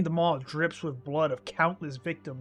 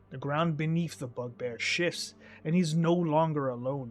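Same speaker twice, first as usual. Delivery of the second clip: ordinary talk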